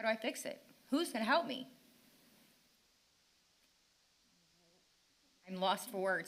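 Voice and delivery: exasperated tone. A parent speaking at a meeting about Maryville failing her child: frustrated. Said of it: "I'm frustrated".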